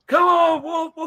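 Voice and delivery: hoarse, strained voice. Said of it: "I done growled so much I can't talk".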